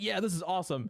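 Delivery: ordinary delivery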